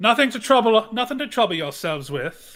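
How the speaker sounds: calling out loudly. Voicing a lord hiding corpses who calls back to guards: calling back. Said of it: "And calls back".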